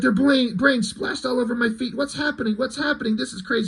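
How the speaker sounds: high, rushed, panicked babbling. Retelling a comic scene of a kidnapped boy flying through the sky: mock freaking out. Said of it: "And he starts freaking out".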